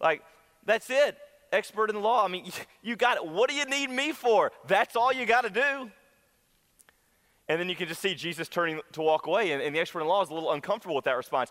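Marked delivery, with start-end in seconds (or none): 0.6-5.9 lightly sarcastic, wry tongue-in-cheek tone, pitched higher. Acting out a scripture scene in the voice of Jesus: sarcastic. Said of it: "It's Jesus with a little sarcasm".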